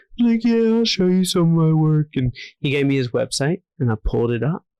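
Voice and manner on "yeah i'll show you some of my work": put-on skater-dude voice. Retelling meeting a man who talked like a skateboarder dude, imitating him. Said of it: "he talked like a skateboarder dude".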